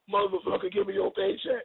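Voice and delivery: cold, hard-edged, rough and gritty menacing voice. Describing a baby mama's sudden switch from a baby voice, in a Terminator voice. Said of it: "from the cute little baby voice to Terminator".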